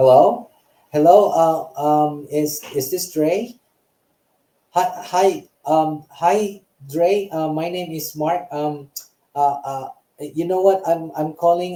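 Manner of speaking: hesitant, unconfident, slow, stumbling with many fillers. Showing how an untrained outbound caller sounds on a call, stuttering with lots of fillers. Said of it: "you're gonna be stuttering or you have a lot of fillers".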